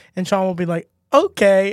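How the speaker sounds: ordinary delivery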